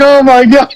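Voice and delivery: talking while laughing hard. Retelling how someone reacted watching a clip: imitating someone laughing hard. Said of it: "dying laughing".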